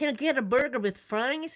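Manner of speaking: slight, put-on American accent. Retelling how they ordered food so staff understood, in a put-on American accent. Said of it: "try and put on a bit of an American accent".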